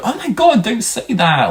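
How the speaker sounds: very high, startled, shocked, laughing voice, acted out. Retelling a friend's reaction to a sick joke: imitating shocked laughter. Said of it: "laughing at the time, like, in a shocked way".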